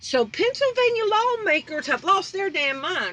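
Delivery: fired-up, heated, high-pitched exasperation. Reacting to a news article about a mask bill: fired up. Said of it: "I'm fired up over this one".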